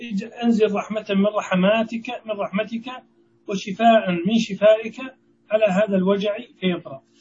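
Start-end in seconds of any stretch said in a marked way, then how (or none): none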